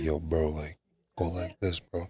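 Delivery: slow, hushed stage half-whisper, kept low. Retelling quietly showing a friend what to do: retelling a half-whisper.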